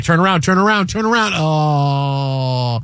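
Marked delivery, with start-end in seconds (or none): none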